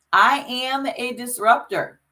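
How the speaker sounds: loud, proud, high-pitched, said full out. Leading a group in their mantra, saying it loud and proud. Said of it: "Say it loud and say it proud".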